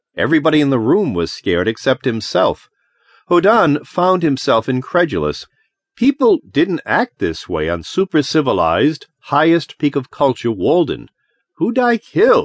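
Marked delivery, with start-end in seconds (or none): 11.6-12.5 demanding, insistent tone, very high. Reading a story aloud, a character turns to the others in the room, demanding. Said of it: "he demanded".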